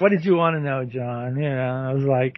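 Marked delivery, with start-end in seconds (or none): 0.0-1.4 exasperated voice. Retelling an interview moment as Fred Gwynne: exasperated Fred Gwynne impression. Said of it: "real exasperated".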